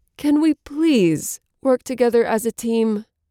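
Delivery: high, pleading, almost begging, a tad desperate. Narrator reads Lucy's plea to the three others, almost begging, a tad desperate. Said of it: "almost begging, sounding a tad desperate".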